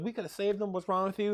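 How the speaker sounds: sobbing, tearful, crying outburst. Retelling an episode's ending where the girl cries: imitating someone crying. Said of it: "she's crying".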